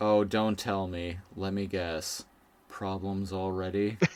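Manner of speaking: put-on drowsy, unruffled murmur, very quiet. Retelling a scene where a character wakes up, imitating a sleepy calm voice. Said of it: "he sounds very sleepy".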